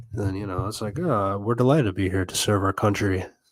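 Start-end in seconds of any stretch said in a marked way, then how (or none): 1.0-3.2 sarcastic delivery.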